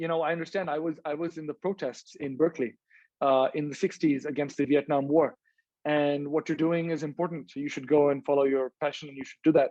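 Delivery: ordinary delivery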